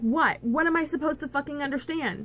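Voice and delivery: play-acted, high, frustrated half-yelling. Recounting a near-death experience, yelling back at a voice: retelling a yell. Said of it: "I'm yelling that".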